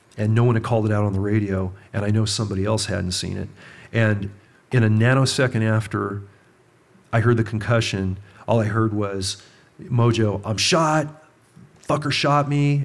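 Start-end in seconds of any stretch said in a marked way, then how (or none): 9.9-12.9 put-on angry cry. Retelling a partner's cry after being shot: imitating an angry yell. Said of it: "he's just yelling, but he was pissed".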